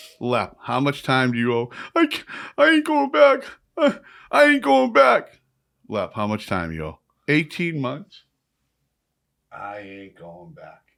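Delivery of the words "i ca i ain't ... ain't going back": very high, very loud stammering sob. Retelling Lep answering how much time he owes, imitating Lep crying. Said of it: "stop crying like a woman".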